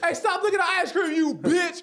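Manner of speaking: very high, shrill, yelled screech. Acting out a made-up scenario involving Mike Tyson, yelling obscenities. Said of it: "Like I'm yelling".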